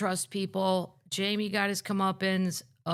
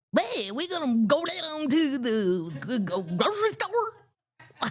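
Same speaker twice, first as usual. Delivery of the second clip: bad put-on Southern accent, sing-song and high; 6 semitones higher than usual. Mocking how Lewis does accents, imitating Lewis's bad Southern accent. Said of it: "Lewis's is the worst. So he he he just goes".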